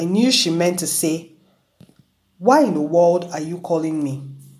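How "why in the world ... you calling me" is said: ordinary delivery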